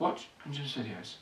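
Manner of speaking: quiet, gentle, mild, unaggressive tone. Retelling what Father said in a dream, imitating a quiet, gentle voice. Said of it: "it was quietly, gently".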